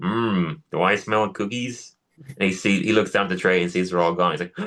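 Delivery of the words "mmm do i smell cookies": slow, old-school cartoon dad voice. Retelling a cartoon bit where Homer comes home wanting cookies, old-school Homer voice. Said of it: "do my old school Homer voice".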